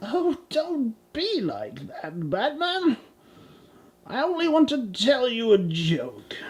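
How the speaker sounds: put-on supervillain voice. Acting a skit, calling out to Batman: Joker voice. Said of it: "What do you want, Joker?".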